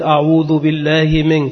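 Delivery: plain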